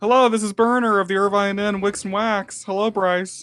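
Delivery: stressed, anxious, on-edge tone. Answering the phone at the Irvine Inn to Bryce, stressed-sounding voice. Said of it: "Why do you sound so stressed?".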